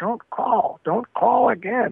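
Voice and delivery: eerie, slow, drawn-out, high creepy voice. Retelling a call where a stranger's voice warned them off: imitating a creepy voice. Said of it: "a creepy voice got on the phone and said".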